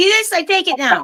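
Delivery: play-acted, cranky, grumpy yelling, pitched way up. Voicing a grumpy robe persona yelling at the neighbors: grumpy yelling at neighbors. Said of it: "she's grumpy, and she yells at the neighbors".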